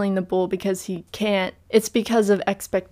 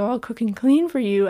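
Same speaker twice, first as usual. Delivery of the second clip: joking, sarcastic delivery; 3 semitones higher than usual. Retelling a film scene, quoting Maria's offer: imitating Maria's sarcastic offer. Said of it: "in sarcasm".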